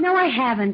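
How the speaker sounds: snapping, barking, snappish tone. Asked if they've seen someone late at night, the speaker gives a barking reply. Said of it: "you don't have to bark at me".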